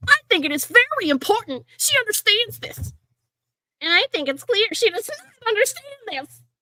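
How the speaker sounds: put-on very high, cross, angry toddler voice. Trying out voices, the speaker settles on an angry toddler voice. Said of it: "an angry toddler voice".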